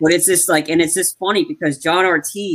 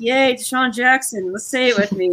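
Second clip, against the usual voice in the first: mock patronizing, high, bright, enthusiastic cheer; 7 semitones higher than usual. Retelling a movie character cheering while holding a baby: imitating condescending cheerfulness. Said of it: "but very condescending".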